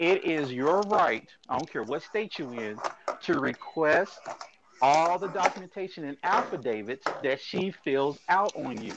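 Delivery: slow, deliberate, word-by-word delivery. Explaining someone's rights to them, speaking slowly. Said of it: "Let me say this slow".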